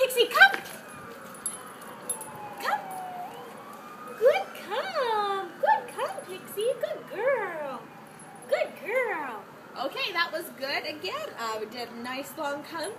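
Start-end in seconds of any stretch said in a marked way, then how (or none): 0.0-9.4 very high, excited, sing-song voice. Speaker calling Pixie to come during training: high-pitched excited voice. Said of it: "So high-pitched, excited voice".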